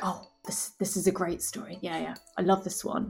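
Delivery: hushed, quiet whisper. Whispering praise of the stories to the crowd in the inn: whispering to the crowd. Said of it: "kind of whispering here and there".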